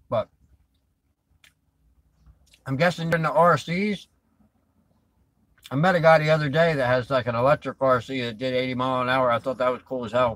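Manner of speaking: muffled speech with mouth full of food. Chatting with someone about their RC cars: talking with mouth full. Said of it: "Try not to talk too much in my mouth full".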